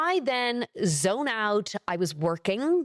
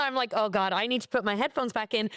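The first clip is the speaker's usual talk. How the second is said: normal talking voice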